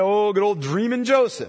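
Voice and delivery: put-on sarcastic, mocking, taunting tone. Explaining how a group mocked a man they called the dreamer: retelling a sarcastic jab. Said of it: "Sarcastically, they call him the dreamer".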